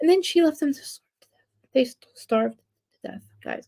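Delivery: whispered, hushed, grim delivery. Telling a story to listeners, whispering. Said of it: "I don't know why I'm whispering".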